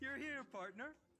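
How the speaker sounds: put-on drunk-sounding, tipsy voice, pitched very high. Greeting a partner who has finally arrived, sounding drunk. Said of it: "you sound drunk".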